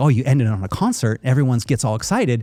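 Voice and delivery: ordinary delivery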